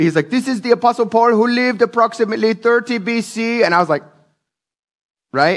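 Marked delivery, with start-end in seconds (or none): 0.3-3.6 put-on high-pitched Turkish accent. Imitating a tour guide in Tarsus, Turkey, in a put-on Turkish accent. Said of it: "That's my Turkish accent".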